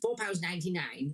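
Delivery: ordinary delivery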